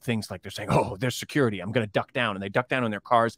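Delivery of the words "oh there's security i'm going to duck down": mock overdramatic reporter voice, put-on dramatic delivery. Mocking journalists who report from Xinjiang, doing a mock-dramatic journalist impression. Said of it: "they make it really dramatic".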